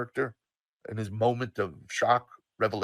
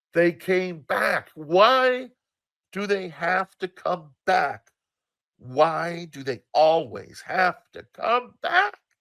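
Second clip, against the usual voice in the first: shrill screaming outburst, drawn-out "why"; 8 semitones higher, 6 dB louder than usual. Retelling a quote of the time mom screamed: imitating mom screaming. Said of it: "the time mom screamed".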